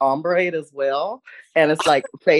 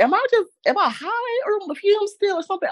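mock confused wondering, very high and baffled. Retelling waking up after two hours of sleep: retelling own confused words. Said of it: "I was so confused".

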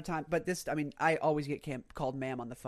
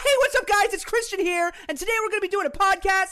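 shrill, booming, put-on kids' TV host voice; 9 dB louder than usual. Mimicking an intro like YouTubers who cater to children: YouTuber voice for children. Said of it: "That's what that sounds like. I don't know why they do that voice".

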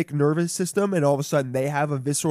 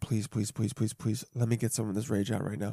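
mock desperate pleading, lower and quieter; 5 semitones lower, 9 dB quieter than usual. Retelling a late night when praying for a chance to vent: retelling desperate praying. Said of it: "I was praying, praying".

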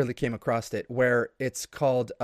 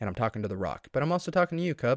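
ordinary talk

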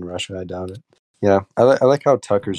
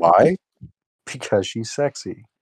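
silliest, dumbest put-on inflection; 2 semitones higher than usual. Joking with the others: Tucker Carlson impression. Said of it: "the easiest, most stupid inflection you can put on".

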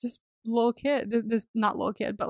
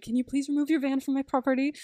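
mock frantic, freaked-out, flipping-out voice; 4 semitones higher than usual. Retelling a movie scene where the mother orders the van removed: imitating someone freaking out. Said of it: "his mom's freaking out".

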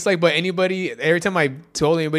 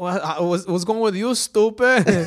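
put-on robot voice; 3 semitones higher than usual.

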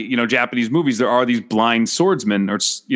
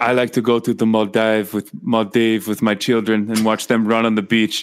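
put-on husky female voice. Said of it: "the husky girl voice".

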